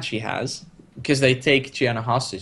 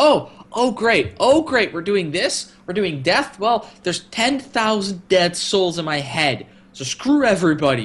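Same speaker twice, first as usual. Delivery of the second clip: put-on fervent rant, much higher; 6 semitones higher than usual. Retelling a game scene where Stark freaks out over a standoff: imitating Stark's fervent rant. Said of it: "how fervent he is about it".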